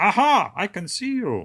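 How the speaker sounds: loud, slow, comic put-on German accent. Retelling what a russian man said, the speaker uses a silly german accent. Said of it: "silly German accent".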